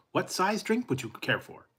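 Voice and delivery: high, syrupy, overly polite automated machine voice. Retelling an order to a drive-through ai: imitating an overly nice automated system. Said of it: "they drive you crazy because they're so nice".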